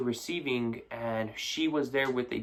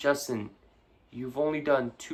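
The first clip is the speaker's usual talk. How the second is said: mock patronizing, condescending, talking-down chiding tone. Retelling how one of his bosses kept repeating his box count, mock-condescending. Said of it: "like all condescendingly".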